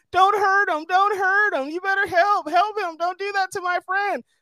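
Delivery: put-on, very high-pitched, loud shouting. Retelling a scene of someone yelling on the phone: imitating someone yelling. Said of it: "He's yelling on the phone".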